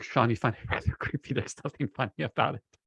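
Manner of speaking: speaking through laughter. Responding to someone who finds the scene creepy, laughing while talking. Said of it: "I'm laughing at that statement".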